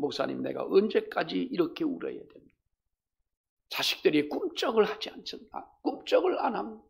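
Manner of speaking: pleading, plaintive voice. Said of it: "하소연하듯".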